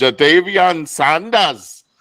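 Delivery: put-on laid-on German-accented voice. Retelling a draft pick heard from the bathroom: German accent. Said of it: "I said in the German voice".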